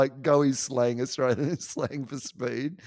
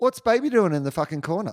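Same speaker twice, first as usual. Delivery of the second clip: put-on Australian accent, faster pace; 5 semitones higher, 3 dB louder than usual. Asked to say a movie line how an Aussie would, in an Australian accent. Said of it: "you can say it how an Aussie would say it".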